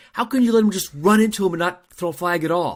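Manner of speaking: mock, very high-pitched screaming yell. Retelling a reaction to a missed flag while watching: imitating own screaming at game. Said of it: "I'm screaming at the game".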